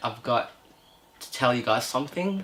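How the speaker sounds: the calmest possible soft voice. A speaker retells what she told Mum and the others, retelling a calm voice. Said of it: "in the most calm voice that I could do".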